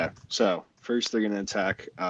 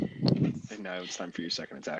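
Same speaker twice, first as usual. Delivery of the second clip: ordinary talk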